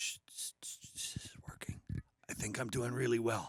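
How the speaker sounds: ASMR-style delivery. Answering a co-host's greeting on their show, speak in an ASMR voice. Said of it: "you've got the A S M R voice on".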